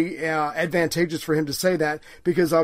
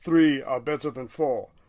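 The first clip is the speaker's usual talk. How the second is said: blunt, put-on Russian accent; 3 semitones lower than usual. Retelling how Stalin answered Eden's proposal, Stalin impression with accent. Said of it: "I don't know where that accent came from".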